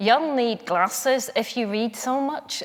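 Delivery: put-on Northern Irish accent. Quoting a mother's remark about reading so much: Northern Irish accent. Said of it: "I'll do my mother's Northern Irish accent".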